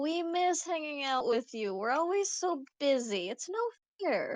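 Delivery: theatrical, hammed-up, slow sing-song delivery. Playing Jackie in a group roleplay scene, dramatic. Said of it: "dramatically lean against the counter and go".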